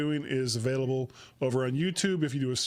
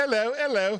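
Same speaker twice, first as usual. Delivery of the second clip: really bad fake English accent, pitched up; 8 semitones higher, 4 dB louder than usual. Podcast host names his other podcast, greeting in a really bad English accent. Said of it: "That was like my really bad, bad English accent".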